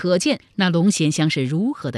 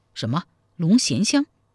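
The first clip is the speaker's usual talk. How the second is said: ordinary delivery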